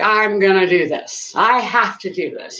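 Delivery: ordinary delivery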